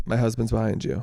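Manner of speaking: ordinary delivery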